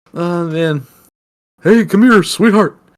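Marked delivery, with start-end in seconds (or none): 1.6-2.7 goofy, hammed-up cartoon alien voice. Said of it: "In my head, he sounds very".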